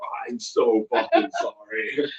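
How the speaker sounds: acted tearful voice, very slow and drawn-out. Retelling a drunk friend's reply: imitating someone tearfully apologizing. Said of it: "I swear those tears".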